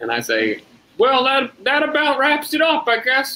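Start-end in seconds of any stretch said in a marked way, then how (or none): 1.0-3.4 put-on man's voice, pitched very high. On a silent phone line, the speaker tries to pass as someone else, imitating Buck. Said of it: "I try to imitate Buck".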